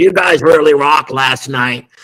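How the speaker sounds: whiskey-soaked voice. Retelling a morning phone call from Bill Gazzarri, Bill Gazzarri whiskey voice. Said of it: "he talked with that whiskey kind of voice".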